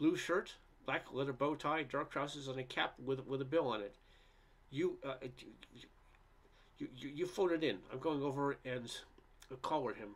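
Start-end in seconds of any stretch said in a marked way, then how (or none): none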